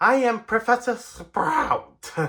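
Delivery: very high-pitched, slow, funny-sounding voice. Describing a Harry Potter game character's voice: funny Professor Sprout voice. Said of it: "she still had that funny voice, you know, go".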